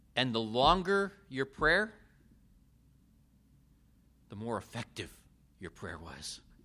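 sarcastic, tongue-in-cheek, swooping sing-song voice. Describing the belief that longer prayers worked better: sarcastic. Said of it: "I'm being sarcastic here".

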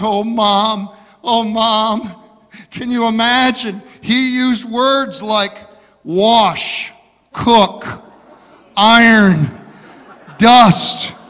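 loud, very slow, mock tearful crying voice. Telling a joke about a bride calling her mother: imitating a crying bride. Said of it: "Still crying, she says".

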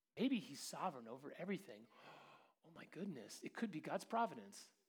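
soft, sarcastic, tongue-in-cheek aside. Preaching about meeting needs in front of you, sarcastic. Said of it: "I'm getting a little sarcastic today".

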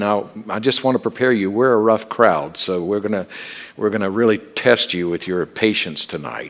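gently ribbing, playful teasing tone. Retelling a warning to the young lady waiting on them: retelling a teasing remark. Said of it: "I said to her very teasingly".

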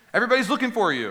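exasperated outburst. Acting out the followers who searched for him and finally found him: mock exasperation. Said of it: "you can read this in an exasperated voice".

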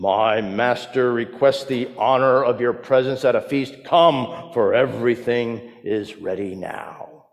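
put-on deep baritone voice calling out. A servant calls out his master's invitation to guests, in a baritone voice. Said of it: "calling out in a baritone voice".

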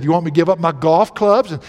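sarcastic, dry delivery. Retelling how a staff member answered him giving up his fishing gear: retelling a sarcastic remark. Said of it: "one of them sarcastically said".

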